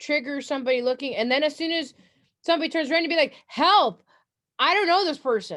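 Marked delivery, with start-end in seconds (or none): 3.5-5.6 loud shouted yell. Showing what to yell once somebody turns around, yelling for help. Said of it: "you want to yell something".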